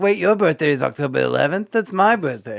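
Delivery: put-on New York accent. Quoting a movie character's line to friends, in a Lindsay Lohan New York accent. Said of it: "she for some reason has that you know New York accent".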